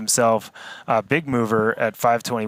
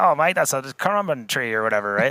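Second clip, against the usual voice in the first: put-on broad Australian accent laid on thick; 3 semitones higher than usual. Describing a forest walk with this guy, mimicking what he'd say, thick aussie accent. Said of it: "obviously in a thick Aussie accent".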